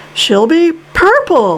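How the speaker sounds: high, swooping, cried-out exclamation. Reading a character answering another character's question, cried out. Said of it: "cried Mr. Wonka".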